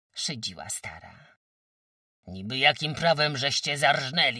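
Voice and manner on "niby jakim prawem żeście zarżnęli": very loud, agitated, heated shout. Narrator reads a man demanding why the pig was slaughtered, agitated shout. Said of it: "Zakrzyczał wzburzony".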